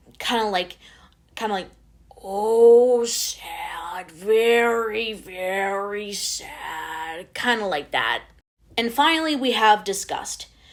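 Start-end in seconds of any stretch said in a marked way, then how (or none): 2.2-7.3 deep, heavy, very slow drawl with "oh" stretched. Showing how the character Sadness sounds, in a deep, slow Snuffleupagus-style drawl. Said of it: "deep, slow, snuffleupagus style drawl".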